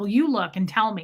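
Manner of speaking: put-on rude, demanding, pushy voice. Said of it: "She was so rude to this woman".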